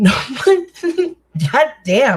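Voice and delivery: talking while cracking up. Reading out a harsh comment, laughing while talking. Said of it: "I'm not laughing at him or anything".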